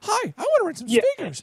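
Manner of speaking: put-on very high voice of a fifteen-year-old. Retelling calling a speaker rental company at fifteen, imitating own teenage voice. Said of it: "they could tell my voice 'cause it's like".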